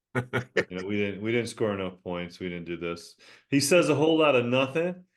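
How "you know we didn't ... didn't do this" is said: flat monotone coach voice, lower. Imitating Belichick answering questions at press conferences: monotone Belichick impression. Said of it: "He's monotone".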